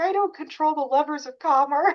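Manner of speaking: very high, sobbing, whimpering, tearful crying voice. Retelling a movie scene where the character walks away, imitating Barbie crying. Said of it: "she starts crying and she's like".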